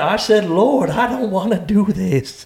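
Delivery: put-on American Southern accent. Retelling what a man in a video said to god, imitating a southern accent. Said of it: "I don't know how he became Southern".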